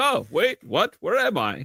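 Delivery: put-on very high, slow, doddering, befuddled old person voice. Retelling how a man pretended not to know what was meant: imitating a confused old person. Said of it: "he did classic old person fake out".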